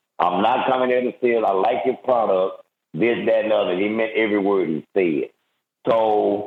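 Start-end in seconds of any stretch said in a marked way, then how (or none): none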